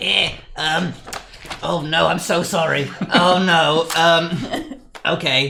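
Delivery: tiny, croaky ghoul voice, very slow and drawn out. Voicing Hog, a small ghoul, for the first time: croaky small ghoul voice. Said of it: "But he's really small. So he's like".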